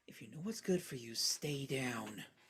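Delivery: barely audible, very soft half-whisper. Voicing a character who holds someone by the chin: half-whispering a threat. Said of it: "just whispers".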